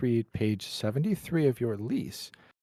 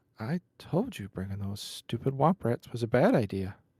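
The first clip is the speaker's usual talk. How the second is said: loud theatrical whisper. Braybach leans over to Toku and says this: Braybach's loud whisper. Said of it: "He says it in a whisper, but it's a loud whisper".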